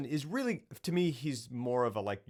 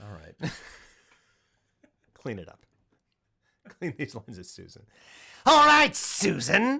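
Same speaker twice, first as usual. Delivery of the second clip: booming, very loud, sing-song, swooping put-on voice; 2 semitones higher, 10 dB louder than usual. Asked to do an impression right now: doing an impression. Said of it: "Do an impression right now".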